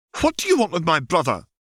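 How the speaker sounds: very high, hurried, demanding tone. A girl pointing her wand at a visitor, demanding. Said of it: "she demanded".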